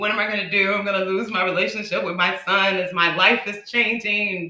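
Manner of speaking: anxious, stressed, worried fretting delivery. Recalling a past call to the listener, acting out their own past stressing. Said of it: "was stressing like".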